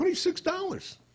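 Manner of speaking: very high, incredulous squeak full of disbelief.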